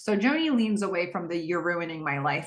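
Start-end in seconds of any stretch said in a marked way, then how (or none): none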